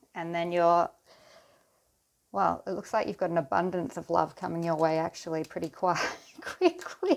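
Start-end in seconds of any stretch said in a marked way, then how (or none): 6.5-7.2 high-pitched, loud speech through laughter. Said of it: "I shouldn't laugh".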